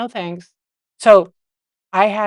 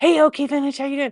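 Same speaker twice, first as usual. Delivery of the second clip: mock angry, pissed-off man's voice, pitched high; 7 semitones higher than usual. Retelling what a man who was stood up said, imitating an angry man. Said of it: "you could tell he was like all pissed off".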